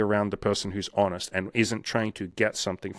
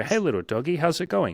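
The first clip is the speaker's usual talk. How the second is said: put-on nice, happy, friendly tone, bright and pitched up; 7 semitones higher than usual. Speaker showing how to greet a calm dog, in a nice happy tone. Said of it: "they hear your tone of voice nice and happy".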